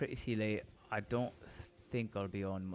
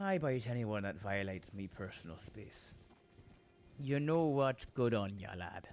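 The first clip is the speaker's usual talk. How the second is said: put-on Irish accent. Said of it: "do the Irish one again".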